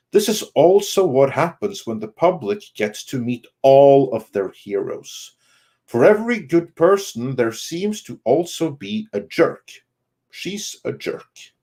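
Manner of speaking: plain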